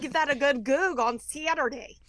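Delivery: very loud, high, put-on Chicago accent. Trying to talk like your husband's family, do a put-on Yankee voice. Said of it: "a Chicago family".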